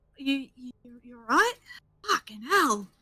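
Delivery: panicked, frantic. Voicing a character who wakes a dying friend with healing magic: panicked. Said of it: "just wide-eyed staring at them like".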